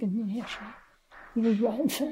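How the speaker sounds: plain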